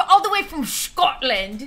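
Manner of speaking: put-on Scottish accent, put on. Talking to chat, the speaker says he's playing Sean Connery: Sean Connery Scottish accent. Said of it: "It's my Scottish accent".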